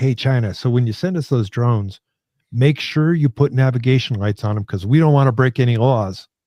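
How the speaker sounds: ordinary delivery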